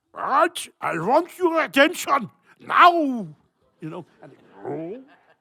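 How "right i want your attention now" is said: put-on German accent, very loud and high. Speaker retells giving orders as a young child, in a german accent. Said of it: "I was doing uh, German accent".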